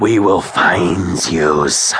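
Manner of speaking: sibilant, menacing hiss, creature voice. Narrating a story, the leading nightshade calls after Max, hissing. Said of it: "the leading nightshade hissed".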